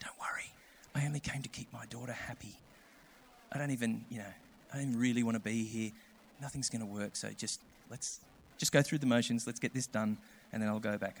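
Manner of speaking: very soft, hushed, barely audible half-whisper. Retelling what a man who came forward for prayer said: imitating a half-whisper. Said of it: "he whispered to me".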